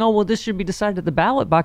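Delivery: plain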